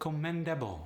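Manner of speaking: commendable with Polish stress. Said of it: "are gonna become".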